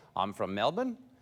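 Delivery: question-like rising tune at the end of Melbourne. Imitating an australian who talks in questions: rising on "melbourne". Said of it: "Australians always talk in questions where they go like".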